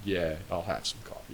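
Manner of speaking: mock grudging hostility. Retelling a movie scene where two enemies share coffee: imitating a hostile attitude. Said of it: "that kinda attitude".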